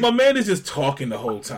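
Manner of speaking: plain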